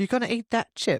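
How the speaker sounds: very high-pitched put-on Australian accent. Imagining their part-Aussie dog talking in its native accent: Dottie's Aussie accent. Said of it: "because Dottie's part uh Aussie, so she'd be like".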